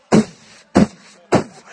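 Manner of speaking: loud, breathy vocal drum poofs.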